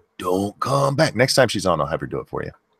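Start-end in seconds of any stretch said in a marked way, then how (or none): 0.2-1.2 put-on cute movie monster voice. Describing how she quotes the ice monster from a movie, in ice monster voice. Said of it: "what's the ice monster say".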